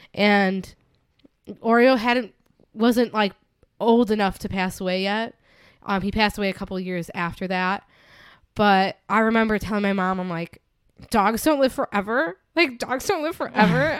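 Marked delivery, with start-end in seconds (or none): 11.1-14.0 mock, really upset, distressed insistent voice. Retelling what she told her mom after the movie: imitating her upset past self. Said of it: "really upset".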